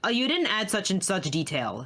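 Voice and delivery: ordinary talk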